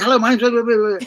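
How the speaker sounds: rattled off far too quickly. Speaker demonstrating how people rush their introductions, talking far too quickly. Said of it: "they'll talk far too quickly".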